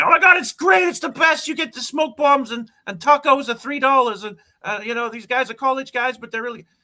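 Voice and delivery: very high, shrill, rapid, overexcited hyped-up gushing. Mocking how pitching the league to casual fans sounds, overexcited hyped-up fanboy. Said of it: "I just sound like a like an overexcited, hyped up fanboy".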